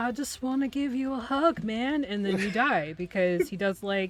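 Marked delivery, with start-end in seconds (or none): 0.0-2.0 stonerish voice, much higher pitch. Voicing the poisonous mushroom man in their game: stoner Mushroom Man voice. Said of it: "The voice that you just did, I think, is spot on".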